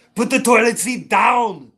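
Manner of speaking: loud, high-pitched yell. Doing an impression of Arnold Schwarzenegger as a woman in the bathroom. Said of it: "here's my impression of Arnold".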